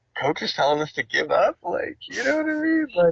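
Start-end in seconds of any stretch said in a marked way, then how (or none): 0.2-1.5 put-on baffled, dumbfounded disbelief in kids' voices. Speaker retells young players reacting to their coach, imitating dumbfounded kids. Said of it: "they're so dumbfounded".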